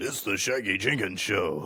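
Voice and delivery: radio voiceover announcer delivery. Saying the show's name like the show's voiceover guy, in [name]'s voice. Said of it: "I can have a big radio voice, like like the voiceover guy".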